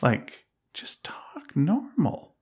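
hushed, soft whisper under the breath.

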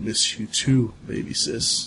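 slow, sorrowful yet smiling. Voicing a ghost who looks at his sister, sad but smiling. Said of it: "He looks, he looks really, really sad, but he's smiling".

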